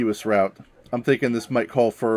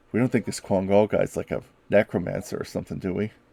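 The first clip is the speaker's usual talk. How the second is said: quiet, hushed voice. Narrating a character's question to the group, in a hushed voice. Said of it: "he says in a hushed voice".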